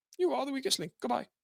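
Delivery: put-on jokey British accent. Quoting a game show line while laughing: imitating a British accent. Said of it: "people got to hear your British accent".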